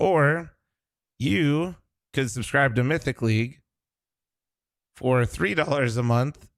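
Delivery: worn-out, tired voice cracking mid-sentence. Speaker talking through game rewards and subscription options, with a voice crack. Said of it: "Sorry for the voice crack".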